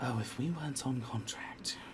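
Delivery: muttered under the breath. Narrator voicing a woman speaking to her first mate as you walk away, muttered under her breath. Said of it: "you hear under her breath".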